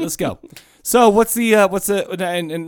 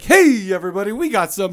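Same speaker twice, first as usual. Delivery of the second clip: hawking carnival barker call; 3 semitones higher than usual. Recalling how Shane opened trivia for everybody, do Shane as a carnival barker. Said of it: "He's like a carnival barker".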